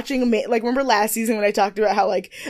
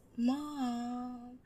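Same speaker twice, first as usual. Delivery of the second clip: very quiet, gentle voice. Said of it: "the voice that she uses with her mom".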